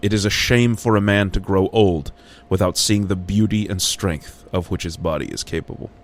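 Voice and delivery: ordinary talk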